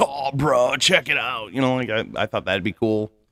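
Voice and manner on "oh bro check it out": slow, drawn-out, laid-back, stoned hippie voice. Showing how a stoner barbarian character talks: Crush voice. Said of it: "he talks like Crush from Little Nemo".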